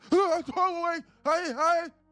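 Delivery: put-on loud scream. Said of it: "Screaming at the top of your lungs".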